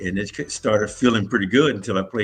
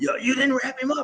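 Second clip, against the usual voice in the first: put-on scream, higher. Retelling how the coach screamed at the player on the sideline: imitating coach screaming. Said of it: "screaming at me and saying".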